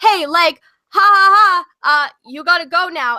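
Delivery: slow, mocking, laughing dismissive tone. Retelling how the boyfriend told her to leave: imitating boyfriend laughing mockingly. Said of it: "your boyfriend comes up to me and he's like".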